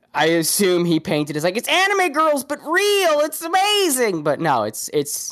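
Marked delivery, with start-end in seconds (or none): 1.5-4.2 very high, gushing voice. Guessing how a streamer described it, imitating Nux Taku. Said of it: "That's a pretty spot-on impression".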